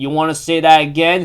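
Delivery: plain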